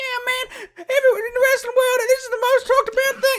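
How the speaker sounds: very high-pitched hype-man voice, pushed way up. Retelling a wrestling radio segment: Jimmy Hart impression. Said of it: "solid Jimmy Hart impression".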